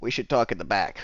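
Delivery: ordinary talk, nothing marked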